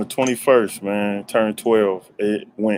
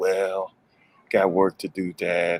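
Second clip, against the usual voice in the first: acted-out listless drawl, bored monotone, slow, flat; 4 dB quieter than usual. Retelling his son's reply after getting presents: imitating his son sounding bored. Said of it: "he sound bored as ever".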